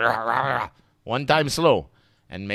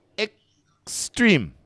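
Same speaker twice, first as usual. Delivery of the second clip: "extreme" very high, slow, split syllable by syllable; 10 semitones higher than usual. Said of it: "I want you to say it slowly first".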